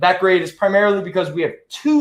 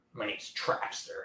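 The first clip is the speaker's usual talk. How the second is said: whispered creepy, leering voice; 9 semitones lower, 18 dB quieter than usual. Introducing the comic character Trapster, Trapster pervert voice. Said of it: "Why are you doing that pervert voice?".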